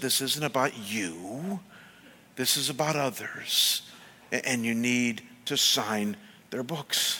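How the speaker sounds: mild, gentle, soft-spoken voice. A speaker retells words they heard from God; God's gentle voice. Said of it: "in his gentle voice".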